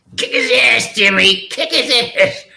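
very high, slow granny voice, side-of-mouth cigarette talk. Imitating a grandmother talking with a cigarette in her mouth. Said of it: "She spoke like this".

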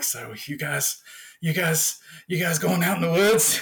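acted unsettling, dazed, befuddled, creepy voice. Retelling a movie scene where Dale talks to the girl: imitating Dale sounding creepy. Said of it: "he sounds creepy".

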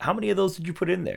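put-on soft, high teasing voice through laughter. Retelling a scene, the speaker quotes Rachel, imitating Rachel laughing. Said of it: "Rachel's kind of like laughing".

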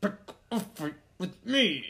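drawn-out promo announcer style. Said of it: "He's like".

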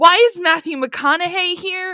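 screaming. Retelling laughing at a plot summary with friends: imitating a past scream. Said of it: "we were just screaming".

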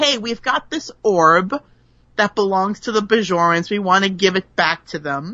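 usual speaking voice

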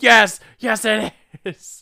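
shrieking at full volume, very high scream. Acting out what others scream in answer: imitating someone screaming. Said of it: "And they're screaming".

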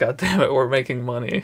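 plain

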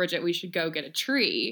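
put-on sarcastic tone. Retelling own remark to bridget, acting out sarcasm. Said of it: "I sarcastically was like".

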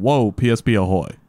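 ordinary delivery

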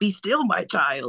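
little alien sage voice. Retelling how a mom spoke to her kids: Yoda voice. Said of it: "She would speak to us in like Yoda voices".

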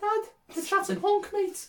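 put-on Liverpool Scouse accent, very high pitch. Acting out a kid talking to his dad: put-on Scouse accent. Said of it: "Why am I dating a Scouser?".

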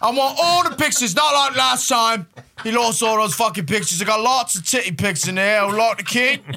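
high, loud, pompous spoiled rich guy voice. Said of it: "What's that fucking voice?".

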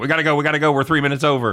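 high, paranoid, panicked, urgent, hurried voice. Retelling the group running three minutes over: imitating paranoid urgency. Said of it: "we're all fucking paranoid. We're like".

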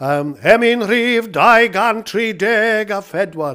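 very slow Welsh preacher voice. A speaker demonstrates the voices of different ministers, doing the welsh one: welsh minister voice. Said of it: "a completely different voice".

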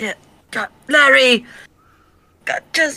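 screaming. Calling for larry, the cameraman, the speaker is screaming for larry. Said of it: "Why are you screaming for Larry?".

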